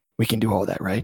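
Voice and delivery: hushed whisper. Acting out an imagined scene, turning to another character: whispering. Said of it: "turns to Paul and whispers".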